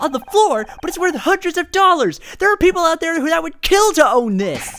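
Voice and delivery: agitated, upset and worked up. Acting a scene, accusing the other of mishandling a rare collectible: agitated and upset. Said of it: "Calm down".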